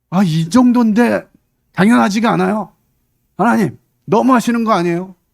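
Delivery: high, loud, defiant voice.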